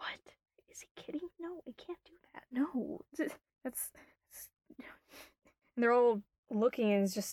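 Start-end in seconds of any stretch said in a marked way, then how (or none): 0.0-4.5 very quiet, hushed whispering. Voicing the town's fortune-tellers reacting to a request: hushed whispering townsfolk. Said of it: "all of them are talking in hushed whip-, whispers".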